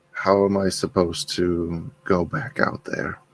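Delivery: low-key, quiet, private aside. Voicing a character speaking to Gwen while his kids sleep: quiet. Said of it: "He's just going to quietly say".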